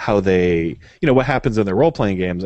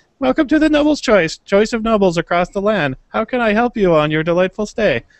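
put-on very high-pitched teenage voice; 14 semitones higher, 4 dB louder than usual. Describing a chain tavern, voicing the teenager who works there, teenage tavern worker voice. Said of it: "They have a teenager that works at the Noble's Choice".

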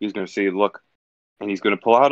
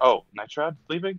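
acted anxious, worried, pitched-up voice; 6 semitones higher than usual. Voicing a character who worries Night Shroud is leaving: acted worried. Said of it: "like, worried, be like".

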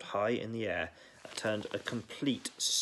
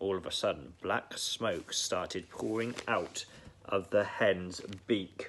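ordinary delivery, nothing marked

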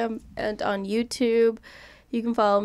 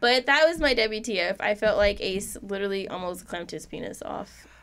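usual speaking voice

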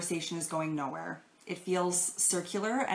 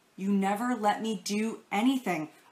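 put-on angry child voice, much slower; 3 semitones higher, 4 dB louder than usual. Playing the child in a role-play example, before slamming the door, mock-angry child. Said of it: "abruptly turn around and slam the door".

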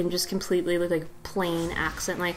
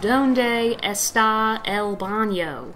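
put-on thickest American accent, spoken very slowly; 2 semitones higher than usual. Retelling how he spoke spanish, in the most american accent possible. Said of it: "with the most American accent I think you could possibly say them".

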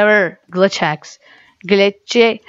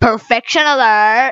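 mock girly teenage girl voice; 2 semitones higher than usual. Imagining a phone alert announcing itself: teenage girly voice. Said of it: "Teenage girly voice".

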